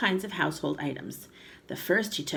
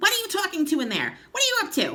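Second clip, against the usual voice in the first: very high, screechy, loud grandmother voice; 13 semitones higher, 5 dB louder than usual. Narrator reading a story, voicing the grandmother calling from the next room, screechy voice. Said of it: "came the screechy voice".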